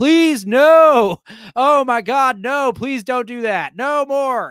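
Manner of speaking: very loud, pleading screams with no stretched long. Retelling how a theater audience screamed at the screen: imitating screaming, begging audience. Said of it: "the theater started begging, like screaming at the screen".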